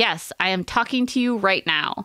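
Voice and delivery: ordinary talk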